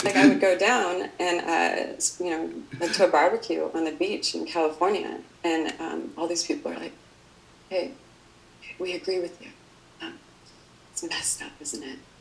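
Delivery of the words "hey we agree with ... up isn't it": very quiet, secretive, barely voiced whisper. Retelling what people at a california beach barbecue said to him, retelling people whispering. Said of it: "Why are you whispering?".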